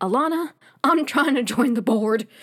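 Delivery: put-on elderly man voice. Retelling what a man said to Alana, in an old man voice. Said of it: "In his old man, 30-year-old voice".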